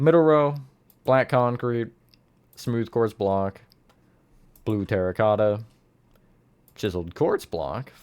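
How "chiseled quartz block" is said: voice breaking mid-phrase. Listing blocks row by row for a build, voice crack. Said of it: "voice crack".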